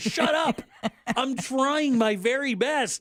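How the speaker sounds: yelled, high, very slow and deliberate. Recalling trying to get a cat to jump while Jack talks, imitating own yelling. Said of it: "I'm literally yelling at him".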